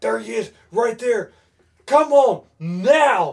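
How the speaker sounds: slow coach yell, "now" drawn out. Retelling how a hunting partner urged him on: imitating someone yelling. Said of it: "Rick's yelling at me".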